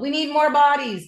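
acted high, drill-instructor-style yell. Retelling yelling in a crowd for more people: retelling own yell. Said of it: "So I yelled".

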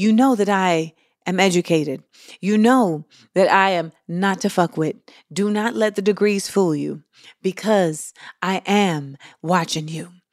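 soft, gentle but serious tone. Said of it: "It's a tone that says".

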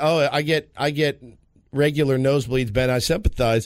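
ordinary talk, nothing marked

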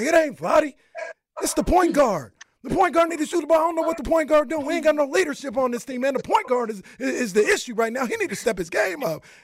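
very high, projected voice. Act out a man speaking to nobody in particular about the point guard, imitating Mr. Fox raising his voice. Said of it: "Mr. Fox like raised his voice".

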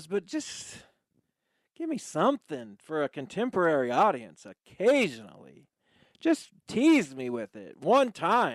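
whiny, whining, swooping complaining voice. Host underwhelmed by a track, answering a co-host, whiny. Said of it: "you sound like a whiny".

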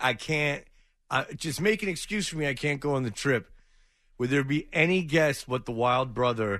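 ordinary talk

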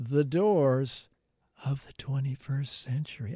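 hushed whispered delivery. Answering an interview question about a tribute band's name, whispering. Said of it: "I'm whispering".

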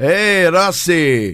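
put-on Italian accent in English. Going through a numbered list of accents, number six is Italian: Italian accent. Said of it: "Number six is Italian".

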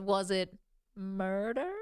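rising intonation with pitch soaring high. Describing how Keith Morrison says his line: Keith Morrison impression, voice rising. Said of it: "his voice goes up like 5 octaves".

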